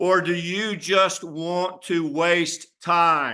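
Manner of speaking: very slow, over-articulated, deliberately spelled out.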